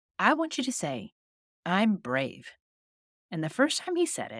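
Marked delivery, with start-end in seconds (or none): none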